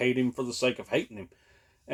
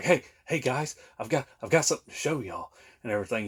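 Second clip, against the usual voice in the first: mock whisper, faster; 4 dB quieter than usual. Retelling a man filming himself on his phone, imitating him whispering. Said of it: "like he's like whispering and stuff".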